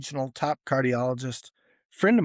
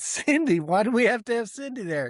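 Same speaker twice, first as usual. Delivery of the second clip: pitched-up speech with a laugh running through; 8 semitones higher than usual. Retelling own reply to a call asking to come in: imitating own laughing reply. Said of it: "Kinda laughing".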